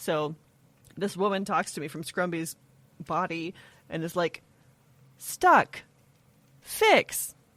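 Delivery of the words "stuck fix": silly little sat-nav voice, very high. Describing what Scrumby says to the speaker, in Scrumby's little GPS voice. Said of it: "It's like a little GPS voice".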